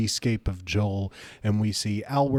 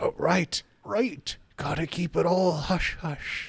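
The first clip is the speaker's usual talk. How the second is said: put-on old man voice, much higher pitch; 8 semitones higher than usual. Told to stop waking everyone up, Kellig agrees, in a little old man voice. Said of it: "this little old man sitting on a rocking chair".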